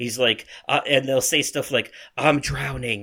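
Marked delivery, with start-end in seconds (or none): 2.2-3.0 acted whispering voices. Speaker describing voices in a game that whisper as you walk by, whispering. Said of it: "They're whispering it like in whispers".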